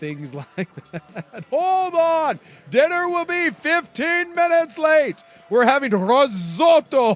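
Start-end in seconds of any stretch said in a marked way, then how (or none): 1.5-7.2 booming, very loud, very high broadcast announcer voice. Play the anchor neighbor dealing with a situation at home, in [name]'s announcer voice. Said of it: "use his announcer voice".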